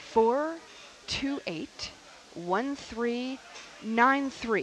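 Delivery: said slowly, slowed-down delivery. Asking listeners to support the station, the host gives the phone number, saying it slowly. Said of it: "I'm going to say it slowly".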